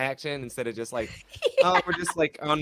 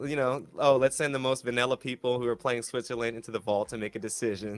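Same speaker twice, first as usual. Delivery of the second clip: ordinary delivery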